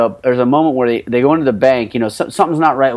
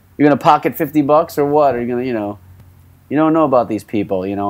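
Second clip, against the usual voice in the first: ordinary talk, nothing marked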